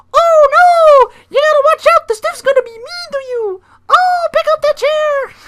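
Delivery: very high, loud, squeaky cartoon voice. Retelling someone yelling warnings at a coworker, in a Mickey Mouse voice. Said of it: "not Mickey Mouse".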